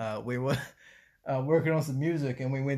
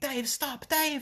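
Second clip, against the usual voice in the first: very high-pitched scream; 13 semitones higher than usual. Retelling a store scene where a man's girlfriend yells at him: imitating someone screaming. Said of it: "his girlfriend screaming like".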